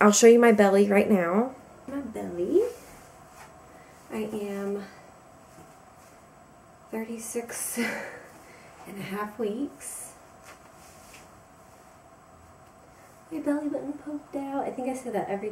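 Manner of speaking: kind of quiet, hushed, soft voice. Speaker keeping it down while her son sleeps downstairs, kind of quiet. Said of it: "I'm being kind of quiet because my son's asleep".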